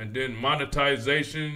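ordinary talk

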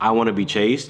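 ordinary talk

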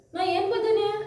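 fake high, angry tone.

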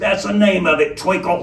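gruff, rough, menacing, growling robber voice. A masked robber, asked by a patron whether this is a holdup, answers roughly with a threat, menacing and rough.

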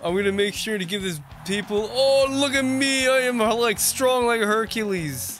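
high, cocky, conceited muscleman bragging voice. Mocking a buff, self-obsessed wrestling opponent: imitating a conceited muscleman. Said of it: "He's like".

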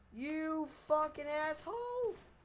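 very high voice, cracking and breaking. Yelling an insult at someone while threatening to jump, voice cracking. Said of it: "That voice crack".

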